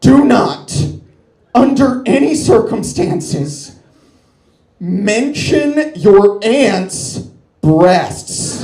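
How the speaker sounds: loud, scary, frightening voice. Telling how mom pulled the kids aside before Thanksgiving: retelling mom's scariest voice. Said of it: "in the scariest voice I have ever heard her use".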